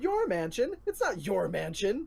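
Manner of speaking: high, loud, defiant tiny halfling voice. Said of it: "tiny halfling ... stands and goes".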